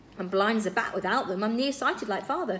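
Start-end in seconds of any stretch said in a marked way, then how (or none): none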